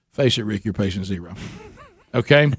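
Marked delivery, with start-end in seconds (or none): 0.2-1.4 hushed, soft half-whisper under the breath. Retelling a walk to the mailbox: retelling a half-whisper to himself. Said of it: "I whispered under my breath to myself".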